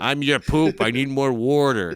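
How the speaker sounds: put-on Philadelphia accent. Playing the talking poop in a joke, in a philadelphia accent. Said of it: "Your poop has an accent".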